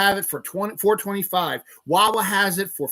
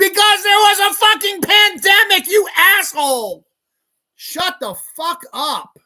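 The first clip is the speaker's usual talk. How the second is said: angry, shrill, high-pitched furious shouting; 11 semitones higher, 6 dB louder than usual. Ranting about gas prices to listeners, yelling angrily. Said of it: "Sorry for yelling".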